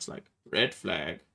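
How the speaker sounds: put-on monotone announcer voice. A speaker imitates how the guy on virtual Le Mans calls it, in a monotone. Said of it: "the most mon- monotone voice I've ever heard".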